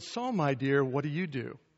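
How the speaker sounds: low, patronizing, condescending talking-down tone. Retelling what a woman at a party asked, in a mock-condescending tone. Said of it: "in a very condescending tone".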